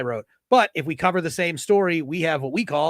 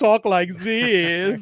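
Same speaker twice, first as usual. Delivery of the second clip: camp German accent, the word "this" drawn out; 3 semitones higher than usual.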